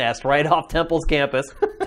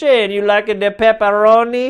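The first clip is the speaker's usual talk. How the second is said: cartoon Italian accent, much higher and louder; 6 semitones higher, 4 dB louder than usual. Speaker quoting a Greek man who talked to him, in a Mario-style Italian accent. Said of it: "He spoke like Mario".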